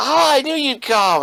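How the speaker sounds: high, loud, gleeful voice. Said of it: "and he goes".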